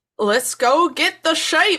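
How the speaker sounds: amateur put-on Scottish accent. Voicing farmers in scotland setting off after a sheep, attempt at a scottish accent. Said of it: "an attempt at a Scottish accent".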